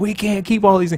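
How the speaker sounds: high, rushed, panicked freak-out, rattled off. Retelling what Lori said: imitating Lori freaking out. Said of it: "so now Lori is freaking out".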